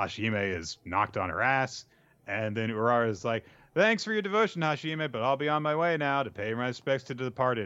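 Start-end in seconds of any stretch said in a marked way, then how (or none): 3.7-7.7 dripping, fake-polite, falsely gracious, sarcastic tone. Retelling a manga scene, voicing a character's parting line: imitating a sarcastic character. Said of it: "Sarcasm mode".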